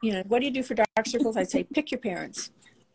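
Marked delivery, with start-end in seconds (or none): 1.6-2.5 sarcastic tone, quieter. Recalling an old answer to questions about dark circles: retelling a sarcastic answer. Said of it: "a real sarcastic".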